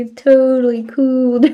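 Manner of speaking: loud, laid-back California surfer-dude voice. Imitating how a game character talks: imitating a California dude. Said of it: "He talks like, like a California dude".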